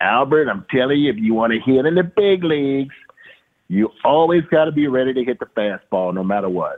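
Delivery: put-on strong, thick Italian accent. Retelling the hitting advice he gave you at the All-Star break, Bobby Molinaro's thick Italian accent. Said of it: "he had that thick Italian accent".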